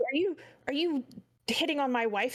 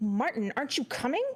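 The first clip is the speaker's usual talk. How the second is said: fast, affronted, indignant tone. A game master voices a wife who stomps off and calls back to Martin, indignant. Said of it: "she like stomps off and she turns".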